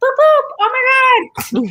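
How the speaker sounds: very high, swooping, stretched, drawn-out yell. Retelling yelling when coming up on somebody: imitating own yelling. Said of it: "I just start yelling".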